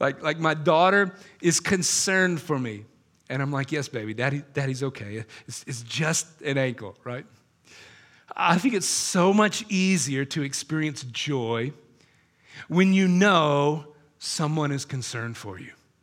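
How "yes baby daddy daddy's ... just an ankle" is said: reassuring, smiling voice despite audible hurt. Retelling answering a concerned daughter after an injury: retelling smiling through pain. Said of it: "this smile comes over my face".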